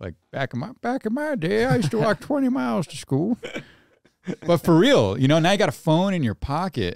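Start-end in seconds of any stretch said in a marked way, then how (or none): 0.0-3.4 put-on old man voice, much higher. Speaker jokes he now sounds like an old guy, then does an old man voice. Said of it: "now I sound like an old guy".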